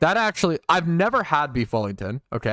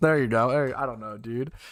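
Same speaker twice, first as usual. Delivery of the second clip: ordinary delivery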